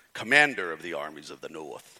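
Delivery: very low, deep, dramatic, declaiming hero voice. Quoting a movie character's speech, in a Maximus voice. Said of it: "He says it like this. ... See, I can do that voice".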